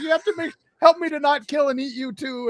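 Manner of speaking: put-on mopey, guilt-ridden, sad, remorseful dinosaur voice. Retelling a children's story, voicing a remorseful dinosaur: put-on sad voice. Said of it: "all sad".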